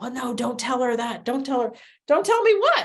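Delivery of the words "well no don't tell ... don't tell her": put-on whispering. Retelling what the aides said among themselves: imitating someone whispering.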